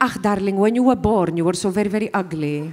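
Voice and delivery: put-on Greek-accented English. Retelling what mum said when asked about accents: imitating mum's greek accent. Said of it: "the rest of the family sound like bloody foreigners".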